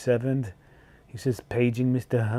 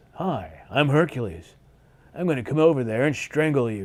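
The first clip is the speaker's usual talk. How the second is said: put-on horrible, cheesy dubbed voiceover voice. Showing how the voiceover actor sounded in Hercules in New York, in a horrible dubbed Hercules voice. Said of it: "The guy sounded like this".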